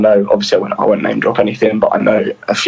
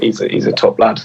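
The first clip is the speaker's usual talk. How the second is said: ordinary delivery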